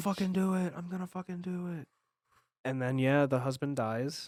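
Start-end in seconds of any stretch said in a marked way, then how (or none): 0.0-1.9 mock ranting, high, screamed delivery. Describing a man screaming at another character, retelling a screamed threat. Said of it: "he's screaming at Voss".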